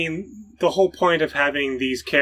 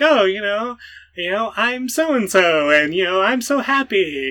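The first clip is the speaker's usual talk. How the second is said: put-on bright, chirpy anime kid voice, much higher, slower; 6 semitones higher than usual. Imitating how he voices a young anime character, put-on bright, chirpy voice. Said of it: "he does like the bright, chirpy voice".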